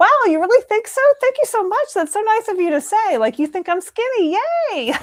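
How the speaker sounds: very high, loud, put-on gushing gratitude. Acting out the usual reply to people's weight comments, with mock-gushing gratitude. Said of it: "agreeing with them and smiling".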